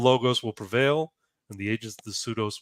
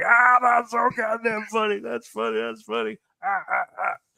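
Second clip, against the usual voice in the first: put-on drunk voice, very high, howling with laughter; 11 semitones higher, 3 dB louder than usual. Telling a joke, acting out the drunk on the bus: imitating a drunk howling with laughter. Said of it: "the wino is just fucking howling".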